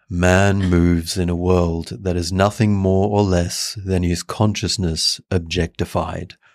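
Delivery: deep, low bedtime reading voice. Asked to go deeper, you get your vocal cords low and read in a deep Neville Goddard voice. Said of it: "Let me just get my vocal cords nice and low".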